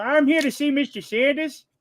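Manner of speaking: very high, silly, put-on cartoon character voice. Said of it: "the voices".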